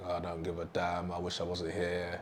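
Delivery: flat, hushed, low, soft, uncaring monotone drone. Contrasting with energized talk, a monotone, don't-give-a-damn delivery. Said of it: "if I was to speak a bit more monotone".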